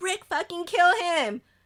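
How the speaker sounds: put-on yelling. Reading out a listener's story about watching a beheading scene, imitating someone yelling. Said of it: "I literally started yelling".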